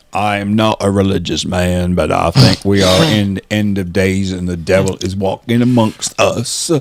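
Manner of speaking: deep, unhurried voice. Doing a version of Forrest Gump about the end of days: Forrest Gump voice. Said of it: "here's my version of Forrest Gump".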